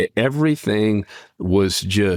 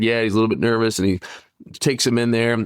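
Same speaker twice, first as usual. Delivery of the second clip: ordinary talk, nothing marked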